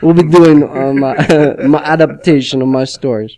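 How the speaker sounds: loud, horrible, fake put-on Russian accent. Retelling the author's statement on the Netflix adaptation, in a horrible Russian accent. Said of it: "horrible Russian accent".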